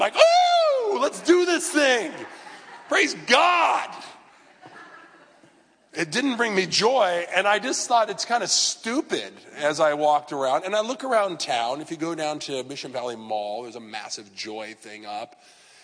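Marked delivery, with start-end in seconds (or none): 0.2-3.9 high, loud, exuberant shout. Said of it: "there was not this exuberant".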